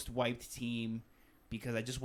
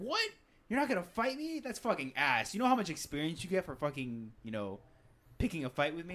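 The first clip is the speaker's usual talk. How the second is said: mock exasperated, high, swooping frustrated griping; 6 semitones higher than usual. Retelling a character's reaction to refusing her fight: imitating a frustrated voice. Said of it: "the almost frustration in her voice".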